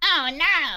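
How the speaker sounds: high character voice. Retelling a pub story, quoting a Munchkin: Munchkin impression. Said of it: "They talk like that".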